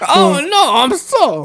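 put-on very high-pitched, drawn-out, swooping, accentless sing-song voice. Repeating the other speaker's line: Chris Pratt's Mario voice. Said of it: "You sounded like Chris Pratt's Mario".

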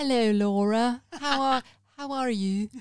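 slightly Belfast-sounding. The podcast host greets guest Laura, with a bit of Belfast accent. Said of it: "that's a bit Belfast".

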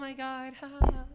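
put-on airhead valley voice. Explaining what ditzy means by acting it out, as a mock ditzy valley girl. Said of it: "it's like oh".

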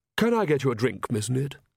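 ordinary delivery

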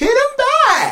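shrill, very high, loud shriek. Quoting Adrian Balboa watching Rocky get pounded: imitating Adrian Balboa shrieking.

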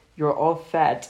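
casual, low-key, offhand confiding aside. Retelling what an italian friend said about americans: very quiet, under her breath. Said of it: "very quietly under her voice".

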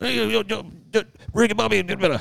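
put-on Cajun accent. Describing how locals near the Louisiana border talk, imitating a Cajun accent. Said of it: "so everybody talks like this".

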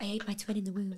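eerie, sinister, hushed little half-whisper. Comparing another speaker to a film character, imitating the Pitch Perfect half-whisperer. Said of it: "the character in Pitch Perfect that whispers the really sinister phrases".

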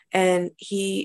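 ordinary delivery

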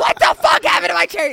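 very high, rapid, furious, enraged scream. Retelling their five-year-old self finding the cherries gone, retelling an angry scream. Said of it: "screaming, like flailing my arms, like pissed".

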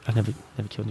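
put-on muttering. Speaker acts out a character's line, retelling it as muttered under his breath. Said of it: "he says under his breath".

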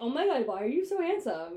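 high, loud pet-talk voice. Retelling how she compliments him: imitating talking to a cat. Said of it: "Why do you talk to me like you talk to the cat?".

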